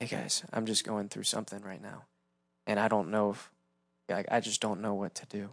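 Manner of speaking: put-on worn-down voice, very quiet, low and hushed. Showing how someone could fake a hard time on a prayer line: fake beat-up voice. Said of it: "intentionally put on a beat up like voice".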